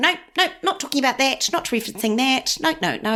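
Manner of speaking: put-on strong New Zealand accent. Retelling how she used to refuse such talk, strong New Zealand accent. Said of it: "it makes me go very New Zealand accent".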